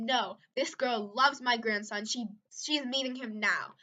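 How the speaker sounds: quarrelsome, argumentative tone, pushing back hard. Retelling how Bill argued with the boss, imitating someone arguing. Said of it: "and then they started fighting".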